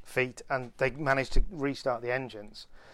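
plain

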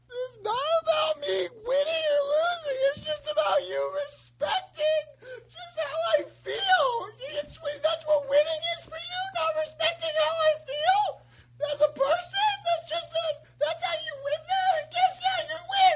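put-on blubbering, fake sobbing with audible crying sounds. Complaining that the others don't respect his feelings: mock crying. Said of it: "Cry away from the microphone".

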